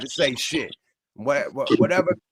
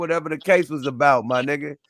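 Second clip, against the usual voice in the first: ordinary talk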